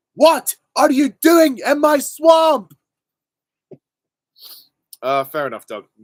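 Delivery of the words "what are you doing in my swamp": very high, loud, slow yell. Answering a question asking for Shrek's line, the speaker does a Shrek impression. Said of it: "Can you do an impression of Shrek saying".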